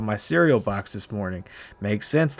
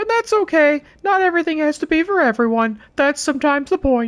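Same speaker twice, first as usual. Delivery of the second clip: very high, reserved, restrained character voice; 4 dB louder than usual. Reading in-game lines, trying the impression kind of reserved: Paul Bearer impression. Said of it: "do I wanna do the Paul Bearer impression".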